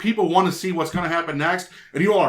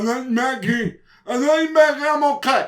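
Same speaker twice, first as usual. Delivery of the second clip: high-pitched, slurred, mush-mouthed mumble; 7 semitones higher than usual. Retelling a scene where a head was bashed in: imitating Glenn's mush mouth. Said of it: "he was all mush mouth going".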